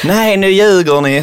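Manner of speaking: put-on broad Scanian accent. Retelling what a woman said when she came up to them: very broad Scanian accent. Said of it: "så här på jättebred skånska".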